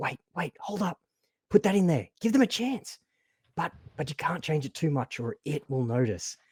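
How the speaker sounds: very faint, distant voice at the edge of hearing. A narrator voices one of two faint voices the listeners overhear, very faint voice. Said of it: "two very faint voices that you can hear just at the edge of your hearing".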